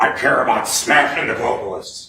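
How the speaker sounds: very loud, booming, full-volume shout. Quoting a witness's answer from the stand: Alex Jones impersonation. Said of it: "I'll do my best Alex impersonation".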